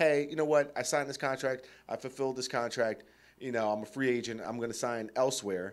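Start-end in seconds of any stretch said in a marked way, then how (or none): none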